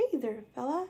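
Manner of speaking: soft, squeaky, high cartoon mouse voice. Trying to recall how a friend does it at a talent show: Mickey Mouse voice. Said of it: "his Mickey Mouse voice".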